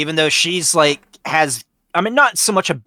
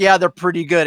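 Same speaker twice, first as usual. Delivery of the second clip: flat, level, no-reaction, stone-faced deadpan; 3 semitones higher than usual. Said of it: "that stone face".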